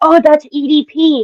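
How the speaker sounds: put-on whispering. Retelling what someone in the van said: imitating someone whispering.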